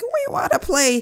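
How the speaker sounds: really squeaky, very high little voice. Speaker recalls asking to play back then, in a squeaky voice. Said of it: "back then I had a really squeaky voice".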